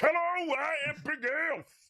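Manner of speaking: full-lung, very high scream of rage. Introducing his creature character to the group, raging scream as Big Elf. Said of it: "I'd be screaming this at the top of my lungs".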